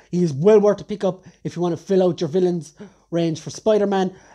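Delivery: normal talking voice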